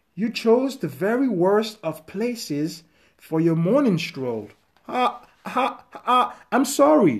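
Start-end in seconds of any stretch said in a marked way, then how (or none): 4.9-7.2 stammering, much higher pitch. A boy, frightened by a hill troll that jumped out, answers it: stammered. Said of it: "the boy stammered".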